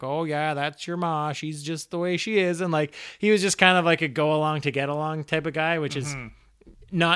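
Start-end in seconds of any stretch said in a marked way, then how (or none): 0.0-2.6 put-on Maine accent. Imitate how a narrator voiced Fran's pushover dad, in a put-on Mainer accent. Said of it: "he put on this Mainer accent".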